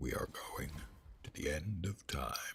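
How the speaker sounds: put-on deep voice, dramatic, barely whispered. Announcing where the group goes next in the game, in a deeper voice. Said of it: "I need kind of a deeper voice to pull that off".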